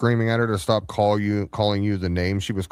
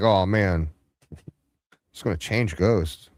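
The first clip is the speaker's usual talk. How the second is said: ordinary talk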